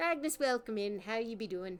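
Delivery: put-on Irish accent. Welcoming a guest in: irish accent. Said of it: "I don't know why I'm doing an Irish fucking accent".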